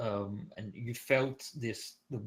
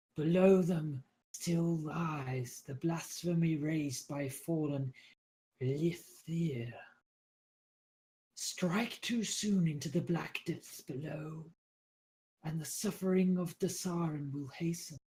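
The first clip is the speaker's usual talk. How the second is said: very weak, frail, faint, high, drawn-out voice; 6 semitones higher than usual. A game narrator voices a guide speaking into the players' dream, very weak. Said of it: "you hear her very weak voice".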